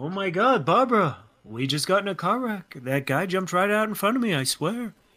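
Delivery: bad, put-on British accent. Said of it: "My British accent still really bad today".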